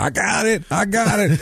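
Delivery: high, excited, eager deputy voice.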